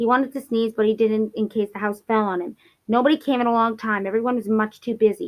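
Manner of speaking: ordinary delivery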